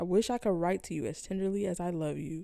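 usual speaking voice

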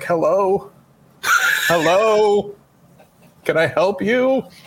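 put-on very slow, faint, drawn-out old-man voice. Describing a funny call recording, the speaker is imitating a faint old man. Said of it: "it was this old man, like, barely can hear".

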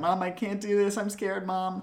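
tearful, high whimpering cry, close to crying. Recapping a scene, the speaker imitates Judy Greer whimpering to her mom. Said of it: "she's whimpering and going".

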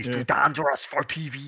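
put-on classy Spanish accent. Imitating a wrestler's line in his Spanish accent: imitating Rush's Spanish accent. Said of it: "the way he said dangerous was just fucking class in his Spanish accent".

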